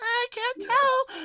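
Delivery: shrill, very high, very loud fairy cry. Voicing a fairy who floats close and peers at a player: voicing a fairy. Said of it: "Floats over toward Gorthos".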